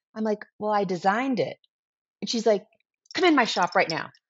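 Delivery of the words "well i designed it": very soft, hushed, barely audible voice. Retelling meeting a shop owner about a cycling jersey, speaker quotes own reply: very soft voice. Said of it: "talking in a very soft voice".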